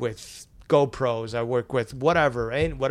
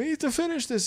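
mock yelling, higher. Retelling how the older newspaper director reacted: imitating someone yelling. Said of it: "he started yelling at us".

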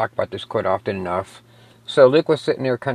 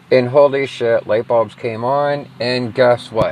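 ordinary talk

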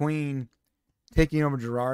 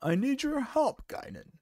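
put-on frail, very old man voice; 9 semitones higher, 4 dB quieter than usual. Retelling a scene where Picard asks Guinan for help, very old frail Picard voice. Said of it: "I just have to sound like a very old".

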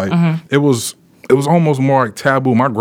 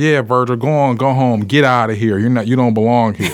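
put-on a kid's way of talking. Retelling what a boy said to send him home: imitating Charlie's voice. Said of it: "That's how he talk".

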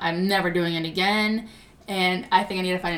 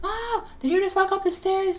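very high, shrill, calling yell; 13 semitones higher than usual. Retelling calling out to Mom after seeing someone on the stairs, retelling a yell. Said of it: "I yelled to my mom".

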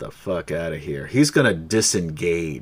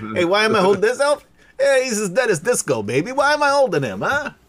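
very high-pitched, loud New York griffin voice; 5 dB louder than usual. Voicing a griffin holding a dead elf: new york accent griffin voice. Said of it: "the griffin is from New York".

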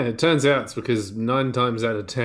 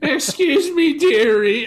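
put-on very high, raised little old lady voice; 7 dB louder than usual. Imagining an elderly woman asking a roaming robot for help: imitating an elderly woman. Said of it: "what if you're an elderly woman".

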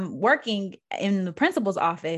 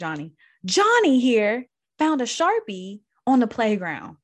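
put-on furious teacher voice, higher pitch; 4 semitones higher, 4 dB louder than usual. Retelling how a first-grade teacher reported a boy to the principal, imitating a livid teacher. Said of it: "she's livid".

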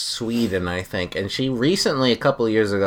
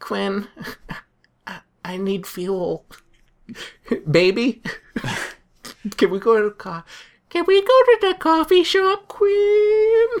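very high, slow, lingering voice; 13 semitones higher than usual. Asking whether a lady friend talks like this: imitating the lady friend's voice. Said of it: "does she talk to you in that voice".

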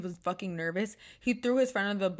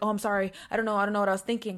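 mock-frantic panicked rambling, words spewing out. Retelling how he reacted when she got angry, imitating a panicked word-spewing apology. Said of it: "starts freaking out and starts spewing words".

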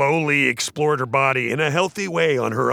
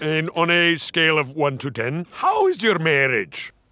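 put-on Scottish voice; 2 semitones higher than usual. Retelling a prank call made as a cable company caller: put-on Scottish voice. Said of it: "He's doing this voice that sounds kind of".

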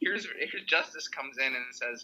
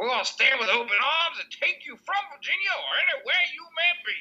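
very high, loud, belted folksy politician speech voice; 13 semitones higher, 5 dB louder than usual. Lapsing into the governor's voice on a serious topic, doing a Jim Justice impression. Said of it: "I'm going to lapse into this voice".

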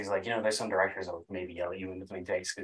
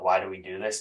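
normal talking voice

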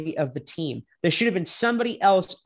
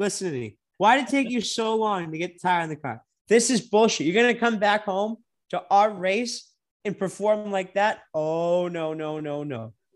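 ordinary talk

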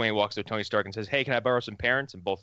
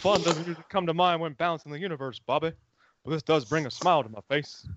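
folksy cartoon-dad voice, pitched higher; 7 semitones higher than usual. Recounting a video that turned Thanos into Hank Hill, Hank Hill voice. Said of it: "someone turned him into Hank Hill".

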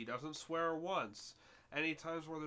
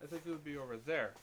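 normal talking voice

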